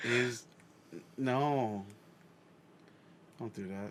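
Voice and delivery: sounding sad. Reacting to the prospect of the show being canceled: sounding sad. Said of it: "You sound so sad".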